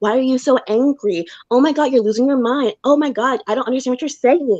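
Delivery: mock patronizing, belittling, condescending, talking-down delivery. Imitating a reality-show cast member's arguing style: imitating condescending arguing. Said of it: "she does do that condescending".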